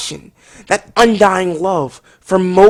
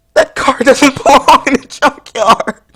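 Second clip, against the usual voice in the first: high, choked-up, sobbing voice on every word. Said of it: "voice is choking up".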